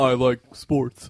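very loud, macho put-on bro voice. Joining in imitating a man pretending to be straight: mock straight-guy bro voice. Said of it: "you're casting aspersions".

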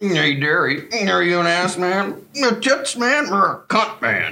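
put-on slurred speech through clenched teeth. Acting out a scene, a character quizzes Wayne and Derry near the girls, clenched-jaw drunk voice. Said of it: "keeps your jaws clenched like he does".

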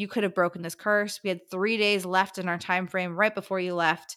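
ordinary talk, nothing marked

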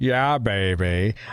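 put-on the word baby stretched out long. Podcast host signs off the episode with an Austin Powers impression. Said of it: "That's your Austin Powers impression?".

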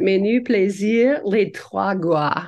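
slow, deliberate, put-on French accent. Practicing a French accent on a documentary title: French accent. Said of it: "I'm gonna practice my French accent".

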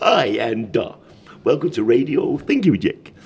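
put-on radio DJ announcer voice, no regional accent. Mimicking an old-time radio presenter, in an assumed radio presenter voice. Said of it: "they all had these assumed voices".

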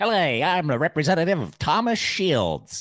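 put-on high, loud, old-timey 1950s businessman voice. Showing how to sound like a lawyer who represents yourself, 1950s businessman voice. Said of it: "1950s businessman".

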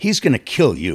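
light, teasing, playful joking tone. Recounting warning someone about his angry father, retelling a joking remark. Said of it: "and I said this jokingly".

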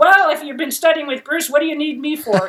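mock cool, dismissive tone. Retelling a man's reply when she first introduced herself, mock-dismissive. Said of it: "He was very sort of off-putting".

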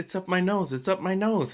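play-acted, high, weepy, tearful crying voice. Retelling what she said with styrofoam up her nose: imitating someone crying. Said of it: "crying all of a sudden".

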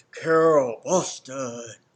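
very loud, booming, room-filling voice. Retelling walking into a room when a man calls her name: big booming voice. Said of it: "big booming voice that comes across the room".

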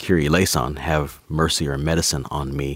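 ordinary talk

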